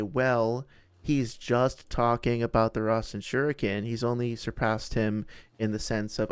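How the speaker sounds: ordinary delivery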